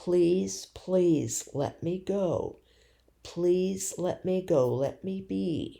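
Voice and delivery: calm, earnest, gentle, sincere coaxing tone. Retelling begging someone to let go: imitating a gentle sincere plea. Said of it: "sincere and pleading in a gentle way".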